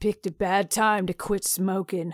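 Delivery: mumbled, muttered under the breath. A man answers the narrator's offer of water or medical help: muttered. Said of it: "he muttered".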